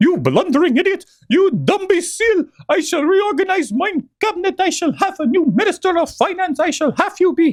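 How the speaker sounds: very high-pitched cartoon character voice. Speaker tries doing a Mickey accent with the voice: Mickey voice. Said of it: "I'm going to try to do a Mickey accent with the the voice".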